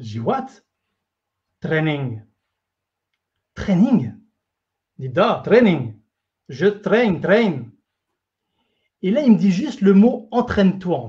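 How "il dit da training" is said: put-on Russian accent with lower pitch. Quoting what he told the speaker about the secret, in his russian accent. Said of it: "avec son accent russe".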